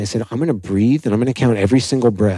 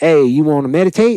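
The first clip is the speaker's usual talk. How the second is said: put-on Gainesville country accent, pitched up; 6 semitones higher, 4 dB louder than usual. Retelling how the meditation center's abbot greeted him: imitating a country accent. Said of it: "he has a country accent".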